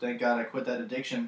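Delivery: ordinary talk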